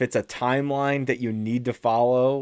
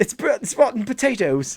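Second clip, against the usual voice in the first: mock British accent, higher; 10 semitones higher, 3 dB louder than usual. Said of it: "You have got a really good British accent".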